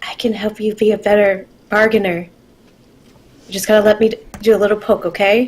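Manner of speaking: whispered speech. Playing a character sliding over to offer help: whispering in his ear. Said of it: "whisper in his ear".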